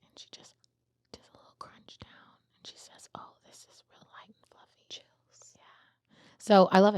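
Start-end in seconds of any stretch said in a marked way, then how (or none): 0.0-4.9 hushed, soft ASMR whisper close to mic. Retelling a cookie review video, imitating Lily Reinhardt speaking softly. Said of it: "she just real softly into the mic".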